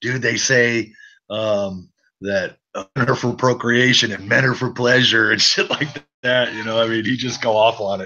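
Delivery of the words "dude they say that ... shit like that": plain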